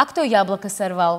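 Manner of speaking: plain reading voice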